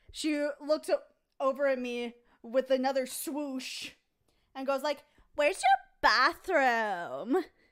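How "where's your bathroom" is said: put-on loud, sing-song, swooping Valley Girl lilt. Retelling what a drunk woman in a store asked: imitating a valley girl voice. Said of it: "so we got, like, a Valley Girl leper?".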